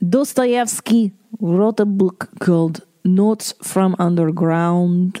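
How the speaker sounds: put-on Russian-accented delivery. Introducing a book by a russian author, in a russian accent. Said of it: "That was my Russian accent".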